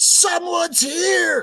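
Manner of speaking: piercing high-pitched scream at the top of the lungs. Wondering how a warning was said: imitating Kaylee screaming. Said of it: "scream at the top of her lungs".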